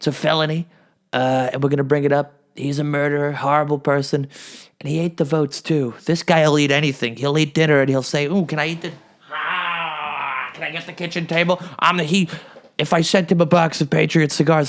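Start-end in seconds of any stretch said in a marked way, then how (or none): 8.3-11.6 taunting caricature voice, drawn-out ah. Imitating him at dinner: DeSanctimonious impression. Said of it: "that's my DeSanctimonious impression".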